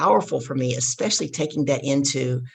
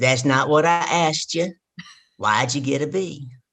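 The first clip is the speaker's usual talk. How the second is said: put-on heavy deep-south Southern accent. Speaker quotes their dad's reply to them as a child, in a heavy Southern accent. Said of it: "my dad has a heavy accent".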